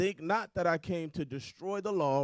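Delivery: ordinary talk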